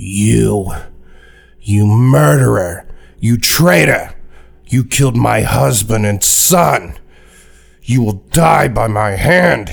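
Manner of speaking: slow, enraged, murderous accusing yell, "you" drawn out. Voicing a ranger accusing someone of killing his family: furious murderous accusation. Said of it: "he just has murder in his eyes".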